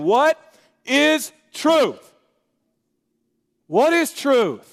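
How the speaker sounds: slow, exasperated, fed-up, frustrated voice. Explaining a Bible verse, voicing Pilate's reply to Jesus: imitating frustrated Pilate. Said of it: "imagine the frustrated tone of Pilate's voice".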